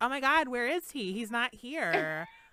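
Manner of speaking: high, loud, gushing delivery.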